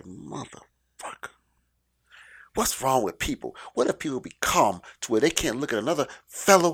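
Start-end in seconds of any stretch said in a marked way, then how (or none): 0.0-3.6 grumbled, muttered under the breath. Retelling walking past a man, muttering under breath. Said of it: "And under my breath".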